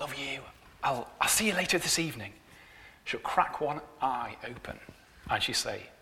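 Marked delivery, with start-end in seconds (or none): 0.0-2.3 half-whispered, very quiet, soft, barely audible. Retelling a morning goodbye kiss to a wife in bed: imitating own half-whisper. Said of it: "and I'll whisper to her".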